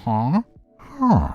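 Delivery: high, squeaky, swooping game-creature noises. Doing an impression during a chat: Minecraft villager impression. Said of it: "my impression of the, uh, the, uh, uh, Minecraft villager".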